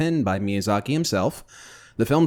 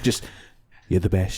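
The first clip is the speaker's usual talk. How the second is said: low, close-mic, ASMR-style voice; 4 semitones lower than usual. Doing a Trump ASMR impression into the mic: Trump ASMR voice. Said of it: "I'm doing the voice in the mic right now".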